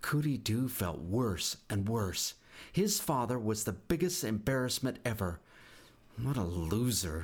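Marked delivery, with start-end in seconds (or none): 6.2-7.3 muttered, dropped voice. Cootie Doo, feeling worse and worse about his father, muttered. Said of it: "he muttered".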